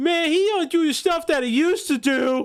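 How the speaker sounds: very high-pitched, taunting, mocking voice. Retelling how a piece of writing comes across: imitating a very mocking tone. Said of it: "after just doing that, like, very mocking tone".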